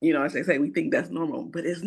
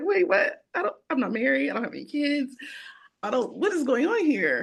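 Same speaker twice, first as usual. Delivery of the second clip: devastated, crying, words breaking through tears; 8 semitones higher than usual. Retelling own reaction to a diagnosis: imitating own past crying. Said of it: "I start crying".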